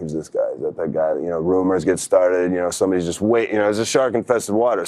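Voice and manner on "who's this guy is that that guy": hushed, murmured, gossipy stage whisper. Retelling how people reacted to a new guy: imitating a half-whisper. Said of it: "kinda whispering".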